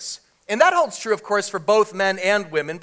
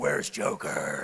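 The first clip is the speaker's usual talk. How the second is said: very quiet, whispered growl under the breath; 11 dB quieter than usual. Comparing superheroes' emotions, doing Batman in a Batman growl. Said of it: "He just kind of growls".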